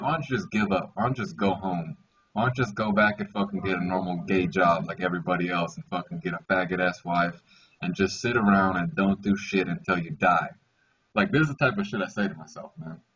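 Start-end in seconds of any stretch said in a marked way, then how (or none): none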